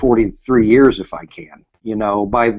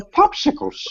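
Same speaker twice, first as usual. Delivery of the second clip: put-on breathy old man voice, air whistling through; 4 dB quieter than usual. Joking about own voice aging, whistling old man voice. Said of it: "whistle when I talk like Herbert on Family Guy".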